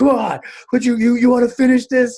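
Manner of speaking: high, loud, exasperated yell.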